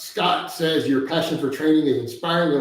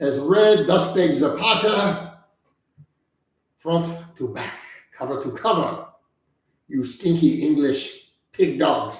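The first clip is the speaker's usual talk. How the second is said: outrageous, over-the-top put-on French accent; 3 semitones higher than usual. Doing a requested impression in an outrageous french accent. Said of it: "in my outrageous French accent".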